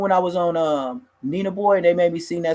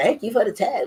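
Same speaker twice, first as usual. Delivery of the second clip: put-on voice like a girl's; 4 semitones higher than usual. Retelling what a man in the canteen line said: imitating a girlish voice. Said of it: "he sounded like a girl".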